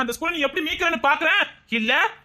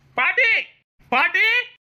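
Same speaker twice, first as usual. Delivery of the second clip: shouting, much higher pitch; 2 semitones higher than usual. A boy calls for his grandmother as he comes in, shouting. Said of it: "எதுக்கு கத்திக்கிட்டே வரான்?".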